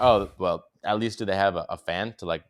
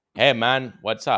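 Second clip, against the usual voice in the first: put-on Cypriot accent; 3 semitones higher, 5 dB louder than usual. Describing meeting a shirtless man at his apartment, imitating a Cypriot accent. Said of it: "in like some Cypriot accent".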